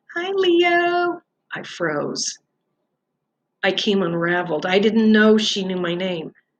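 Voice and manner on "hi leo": very high, squeaky little rat squeak. Stargirl waves the rat's paw at the control room and greets Leo in a squeaky voice. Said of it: "said in a squeaky voice".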